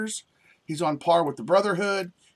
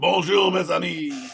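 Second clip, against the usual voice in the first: put-on French accent. Giving a French greeting like the candlestick from Beauty and the Beast. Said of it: "Like the candlestick from fucking Beast Beauty".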